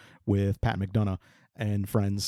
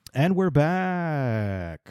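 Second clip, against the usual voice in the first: game show announcer style, higher; 5 semitones higher than usual. Announcing a return to the topic: game show host voice. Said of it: "I feel like a game show host when I say it like that".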